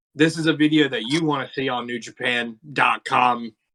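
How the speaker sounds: ordinary talk, nothing marked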